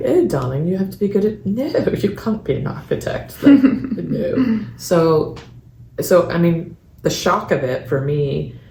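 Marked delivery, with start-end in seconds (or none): 0.0-4.7 put-on perfect British accent with higher pitch. Speaker recalls her father laughing at her wish to be an architect: dad's british accent. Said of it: "in his perfect British accent".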